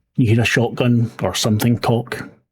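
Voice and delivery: ordinary talk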